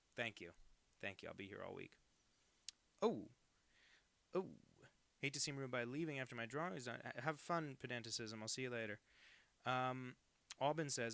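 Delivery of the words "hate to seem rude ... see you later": plain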